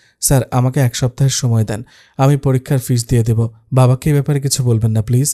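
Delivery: plain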